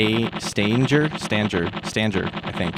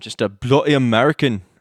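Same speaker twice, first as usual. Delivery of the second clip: really terrible, fake Scottish accent; 2 semitones higher, 4 dB louder than usual. Apologizing to a viewer for mangling their name: really horrible scottish accent.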